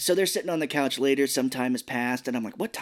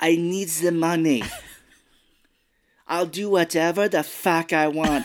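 put-on slow, deliberate Russian accent; 4 semitones higher, 4 dB louder than usual. Do the voice of the Russian dude from the movie Rounders for your listeners. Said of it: "I'm going to do his voice from the movie Rounders, where he plays a Russian dude".

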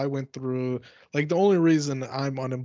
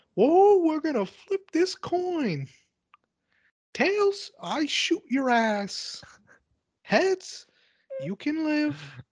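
put-on high cartoon mouse voice. Imagining Mickey Mouse with a gun in a booth: Mickey Mouse voice. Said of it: "I want Mickey Mouse to come out with a gun. And he says".

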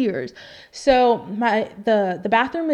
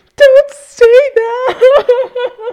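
wailing, very high, shrill, loud hysterical sobbing; 13 dB louder than usual. Recalling his joke, speaker re-enacts their past self hysterically bawling. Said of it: "hysterically bawling".

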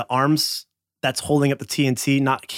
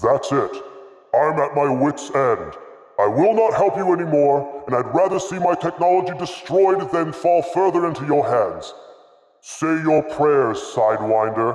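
big, loud, booming, resounding voice. Narrating a trap scene, voice the unseen figure addressing sidewinder: booming voice. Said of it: "A booming voice that seems to come from all angles".

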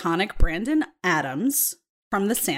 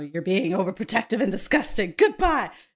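angry, flipped-out outburst with rising pitch. Retelling a TV scene where a date storms off: imitating someone flipping out. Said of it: "flips out, like, very, in very feminist fashion".

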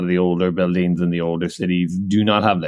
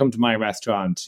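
acted forceful, pushy tone, higher pitch; 3 semitones higher than usual. Retelling how a restaurant owner called them in: imitating a pushy restaurant owner. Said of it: "kind of very strong arming us".

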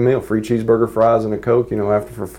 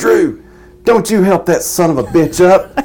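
raspy, pitched-up voice of a longtime smoker; 8 semitones higher, 4 dB louder than usual. Retelling a woman calling to Drew from behind, raspy 40-year-smoker voice. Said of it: "raspy voice, like she's been a 40-year smoker".

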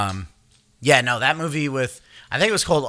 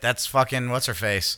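plain

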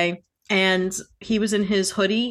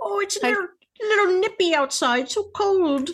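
put-on grandma voice, much higher pitch; 11 semitones higher than usual. Told they look like a tiny grandma, the speaker plays along, playing a grandma. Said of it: "old people are the only ones that say".

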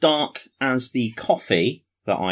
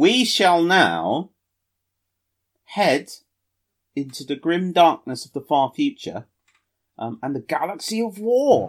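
deliberately stupid, grand, silly, high put-on voice; 6 semitones higher than usual. Introducing the next segment to listeners, in a stupid voice. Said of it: "talking in a stupid voice".

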